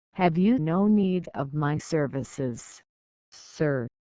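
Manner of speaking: ordinary delivery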